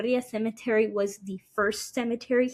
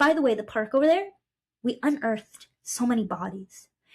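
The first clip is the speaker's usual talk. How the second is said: acted-out casual, offhand, nonchalant throwaway delivery. Retelling what coworkers said about the park: imitating a nonchalant remark. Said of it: "they said this so nonchalantly".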